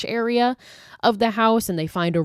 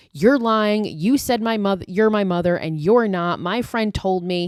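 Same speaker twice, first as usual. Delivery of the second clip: plain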